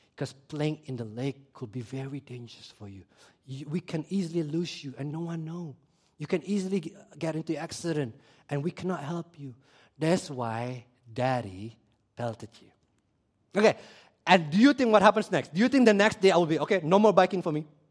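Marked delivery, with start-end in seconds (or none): 0.2-12.7 soft, tender, gentle, consoling motherly voice. Recalling being consoled after a belting, the speaker imitates their mom comforting them. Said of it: "My mom would say things like this".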